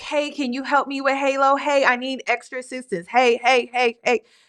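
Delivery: put-on pleading, begging over and over. Retelling her text messages to the man: imitating pleading. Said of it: "where she was pleading".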